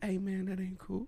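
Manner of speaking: smooth-talking, very smooth voice. Retelling how a giant school football player talks: imitating Joel Page's smooth voice. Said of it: "he talks like this".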